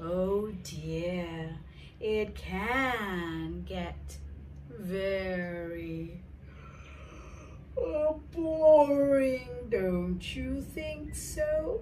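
very slow, every word stretched out. Demonstrating an overly slow way of speaking, very slow speech. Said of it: "nobody speaks slowly like that".

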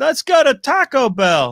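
muppet-like put-on voice. Asked for a quick impression, doing a Mark Ellis impression. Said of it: "you wanna do your quick Ellis impression".

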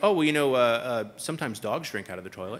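dead serious, very deep, low deadpan voice. Retelling a building inspector's reason for a sign: imitating a deadpan inspector. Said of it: "And with a straight face".

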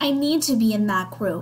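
ordinary talk

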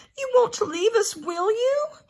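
anxious cry, very high and loud. A narrator reads a character who got no reply to his first question, calling anxiously. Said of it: "he called anxiously".

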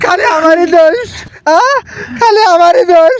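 crying, weepy delivery.

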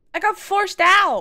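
voice blowing up, very loud, shrill, drawn out. Answering why a vacation was taken in such a bad time: loud voice. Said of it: "my voice got loud".

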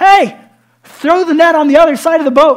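very loud, high, booming shout. Retelling a man on the shore calling to a boat: imitating someone shouting from afar. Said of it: "he starts screaming out a hundred yards away".

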